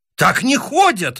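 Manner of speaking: very high-pitched exclaiming outcry. A chess opponent protests the narrator's move during their game: exclaiming. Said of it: "восклицает он".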